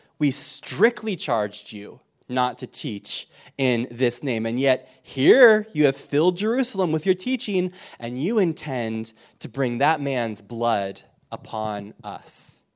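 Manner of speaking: usual speaking voice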